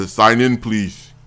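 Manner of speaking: put-on fake Russian accent. Retelling what a man behind a desk said, put-on russian accent. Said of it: "a big giant bald headed thug guy with a Russian accent".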